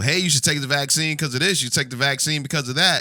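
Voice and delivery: radio announcer voice, read like a promo.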